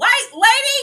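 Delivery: shouting. Retelling a reaction to a character walking away: yelling at the screen. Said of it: "I yelled".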